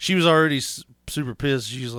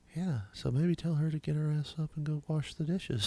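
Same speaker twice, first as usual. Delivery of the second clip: very quiet, soft, proper, polite telephone voice; 13 dB quieter than usual. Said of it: "she'd go back to talking like this".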